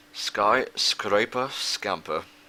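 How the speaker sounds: very slow, careful, drawn-out pronunciation. Gamer reads out a level's complicated name, said very slowly. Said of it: "I have to say it very slowly".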